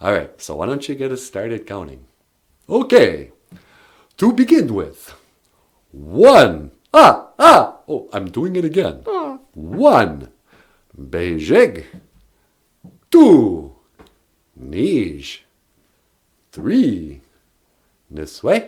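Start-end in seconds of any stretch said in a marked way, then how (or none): 2.7-18.7 put-on Transylvanian accent, louder and much slower. Asked to start the counting lesson, the character counts in a Transylvanian accent. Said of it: "the Transylvanian accent is a lot like".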